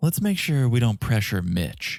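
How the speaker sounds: put-on self-absorbed voice. Retelling how someone talks about himself in third person: imitating Mitch. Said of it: "'cause he goes".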